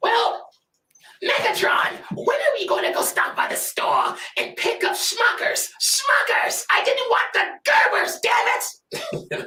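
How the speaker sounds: very high-pitched comic voice, pushed way up. Put on the spot and asked to do Starscream, the speaker performs a high-pitched Starscream voice. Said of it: "get a high pitched voice like that".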